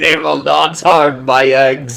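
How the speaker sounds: put-on hard-nosed, tough elderly woman voice. Quoting a scene's line: imitating a tough old lady. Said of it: "this tough old lady".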